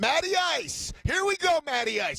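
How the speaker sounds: put-on frantic, shrill, very high-pitched screaming. Retelling a craps game where a man kept yelling: imitating a man screaming. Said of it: "And he's screaming".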